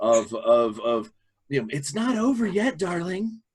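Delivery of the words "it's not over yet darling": put-on sweet grandmother voice, pitched high. A game master voices a drooling, hazy-eyed figure who speaks in a sweet grandmother voice. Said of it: "he lets out this like sweet grandmother voice".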